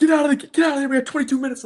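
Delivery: very high-pitched, loud, furious screaming. Retelling the coach screaming at a kid to leave practice: imitating the coach screaming. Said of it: "screaming at the kid".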